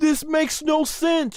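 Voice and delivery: mock shrill, very high-pitched scream. Retelling yelling at the TV during a match: imitating own screaming. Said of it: "I was at the T V screaming".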